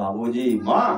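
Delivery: low, soft, loving voice.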